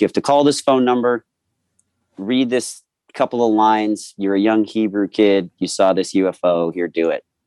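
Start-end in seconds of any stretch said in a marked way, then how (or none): none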